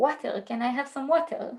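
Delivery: put-on heavily laid-on Hebrew accent. Retelling mom asking the woman at the counter for water, heavy hebrew accent. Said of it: "She did it like with this heavy Hebrew accent".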